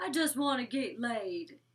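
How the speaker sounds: slow, clumsy, bad country accent. Quoting what a woman said, in a bad country accent. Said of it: "I can't even talk in a fucking country accent".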